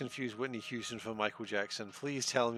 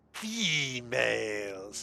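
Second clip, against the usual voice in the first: nasal, nasally put-on voice. Asked to make the sound of a quark, the speaker jokes in a nasally voice. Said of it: "Unless I do like a nasally voice and say females".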